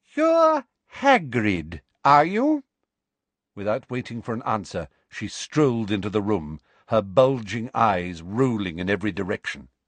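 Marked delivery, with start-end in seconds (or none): 0.2-2.6 very high, loud, slow, swooping, drawn-out over-enunciation. A woman addresses the giant hagrid on entering, slowly and loudly. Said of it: "slowly and loudly, as though speaking to somebody deaf".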